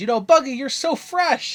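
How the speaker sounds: very high, loud, cheesy commercial voice. Retelling a crewman's line to Buggy: cereal-commercial voice. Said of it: "It sounds like a, a cereal commercial".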